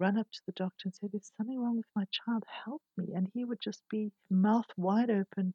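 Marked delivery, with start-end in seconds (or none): 1.1-3.1 acted frantic, desperate, high, rushed, panicked voice. Retelling begging a doctor to help the child: imitating own panicked plea.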